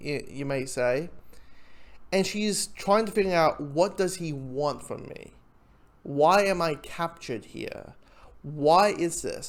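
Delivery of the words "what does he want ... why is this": ordinary talk, nothing marked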